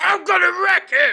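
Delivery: very high, very loud belted shout. Introducing Wreck-It Ralph in a movie review, John C. Reilly impression. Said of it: "That's my impression of John C. Reilly".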